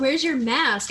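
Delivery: loud, full-throated screaming outburst. Retelling how a woman in a parking lot started at the speaker, imitating someone screaming. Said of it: "she starts screaming over something about".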